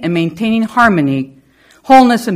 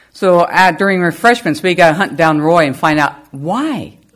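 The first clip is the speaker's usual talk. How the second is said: ordinary talk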